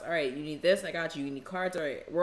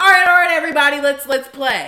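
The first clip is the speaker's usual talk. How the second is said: shrill, very loud, high-pitched raised voice; 9 semitones higher, 17 dB louder than usual. Retelling how a guest called everyone to play: imitating her raising her voice. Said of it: "she raises her voice in my house and goes".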